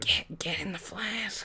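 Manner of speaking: timid, quiet, meek little demon voice. Imitating the movie demon's line, asked to do it quiet: quiet meek demon voice. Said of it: "do it real, real nice and quiet into the mic".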